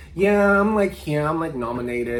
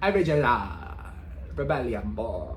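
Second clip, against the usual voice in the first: put-on West Indian accent; 4 semitones lower, 4 dB quieter than usual. Speaker enjoys saying a favourite phrase in a west indian accent. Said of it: "I just like saying original in that West Indian accent".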